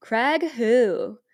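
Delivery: put-on loud, eighties movie-style California accent. Imitating a man from an eighties movie scene, eighties California accent. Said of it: "I'm going to try to imitate how this man talks".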